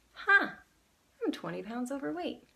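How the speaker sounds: curious, inquisitive, wondering read with lifted pitch. Demonstrating one sentence said with different emotions: curious. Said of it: "say it as like curious".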